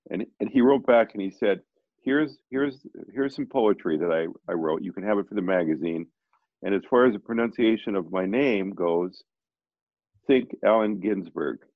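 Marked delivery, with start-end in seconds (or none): none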